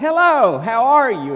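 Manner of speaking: bright, high, perky, positive-sounding robocall voice. Describing robocalls, the speaker imitates a recording's perky, positive-sounding voice. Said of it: "this perky, positive-sounding voice".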